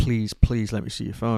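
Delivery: mock-sobbing, imitating hysterical crying. Speaker retells begging her to let them see her phone, imitating hysterical crying. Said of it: "I'm like just hysterically crying".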